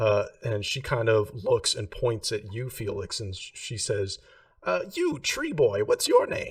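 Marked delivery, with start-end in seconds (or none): 4.9-6.5 very high, loud, swooping witch voice. The game master voices a character asking a player's character's name, witch-like voice. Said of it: "witch like voice".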